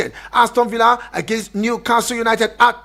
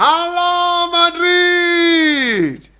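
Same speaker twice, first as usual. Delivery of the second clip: high shout with Madrid stretched out; 7 semitones higher than usual. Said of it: "you have to shout it".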